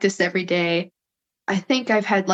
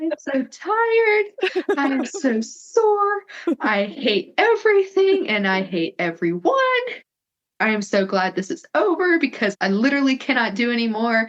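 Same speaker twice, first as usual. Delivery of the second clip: breaking into high, swooping sobs mid-sentence; 6 semitones higher than usual. Recounting the moment after hearing they won, imitating own sobbing. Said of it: "just sobbing".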